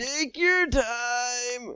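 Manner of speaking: very high gasping-for-air voice, drawn out. Retelling a scene where Sandy offers a drink: SpongeBob dying of suffocation voice. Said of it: ""I'm literally dying of suffocation" voice".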